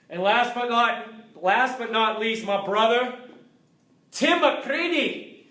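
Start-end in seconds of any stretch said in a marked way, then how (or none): 4.1-5.2 high, put-on Scottish accent. Naming a brother at the end of a list: Scottish accent. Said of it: "I love saying your name in Scottish".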